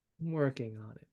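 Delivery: worn-out, tired, weary. Driving in a car after warning people to store the things away, tired. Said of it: "He sounds tired".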